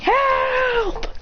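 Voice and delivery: high-pitched yell.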